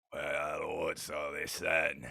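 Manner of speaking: deep, rough, gravelly voice. A narrator voices the father speaking from the doorway, rough, gravelly voice. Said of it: "a rough, gravelly voice from the doorway".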